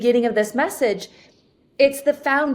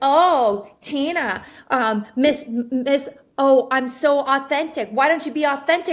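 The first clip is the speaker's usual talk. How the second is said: mock combative, confrontational, aggressive tone. Retelling what another person said back, imitating someone getting aggressive. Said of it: "she kinda got aggressive with me".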